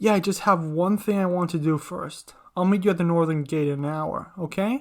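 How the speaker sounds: plain reading voice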